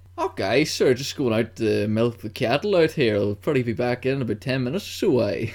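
put-on rural Canadian farmhand accent. Prompted to say something about cows, showing off the accent: rural canadian accent. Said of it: "You say something about cows".

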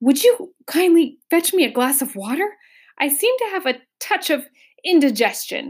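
gasping, distressed. A diner at the meal turns to Milo with a distressed look: gasping, distressed. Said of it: "with a most distressed look on his face, he turned to Milo and gasped".

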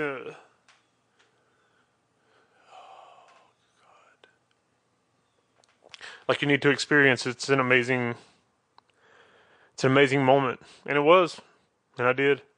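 voice straining to hold back emotion. Recalling people urging the speaker to have a kid, holding back emotion. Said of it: "I'm trying not to get too emotional".

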